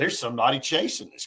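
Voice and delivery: ordinary talk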